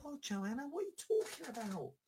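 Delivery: high, squeaky, mock exasperated outburst.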